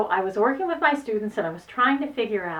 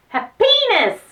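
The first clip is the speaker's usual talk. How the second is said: happiness with heaviest stress on second syllable -pi-; 13 semitones higher, 8 dB louder than usual. Retelling a shy student calling out the word: imitating stress on second syllable of happiness. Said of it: "say it with the heaviest stress on the second syllable".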